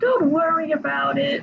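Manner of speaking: bad, lazy cartoon mouse voice. Fan discussing characters quotes Mickey speaking to Riku: terrible Mickey voice. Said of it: "That was a terrible Mickey voice".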